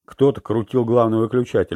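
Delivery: plain reading voice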